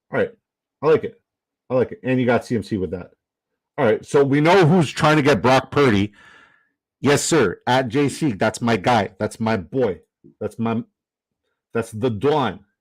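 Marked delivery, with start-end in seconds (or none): 7.6-12.5 put-on New York accent, slow and unhurried. Talking football players with a New York guy, speaker slips into a put-on New York accent. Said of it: "I don't mean to do the New York impression".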